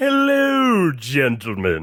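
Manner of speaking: really bad, low, posh distinguished British accent. Introduced as a variant from the multiverse, greeting the others in a bad british accent. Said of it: "it was just doing like a really bad, like British version".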